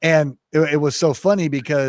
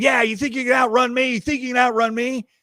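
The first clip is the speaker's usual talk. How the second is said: put-on, very high-pitched hollering yell; 11 semitones higher than usual. Retelling a tackle where the officer yelled at the suspect: imitating a yell. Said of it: "Daryl starts yelling at him".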